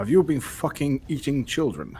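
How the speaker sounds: blunt, bald, flat-out, unsoftened delivery. Playing a character who throws teeth on the floor: blunt, flat-out accusation. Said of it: "just flat out bluntness".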